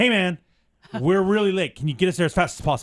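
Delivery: mock-aggressive, forceful delivery. Retelling what Emily said to the driver as the group piles in: imitating Emily's aggressive demand. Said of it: "Emily very aggressively".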